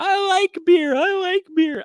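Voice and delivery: very high, wailing, sobbing, crying screech. Retelling a scene their mom made, imitating her crying and screaming. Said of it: "crying by the end of it and screaming".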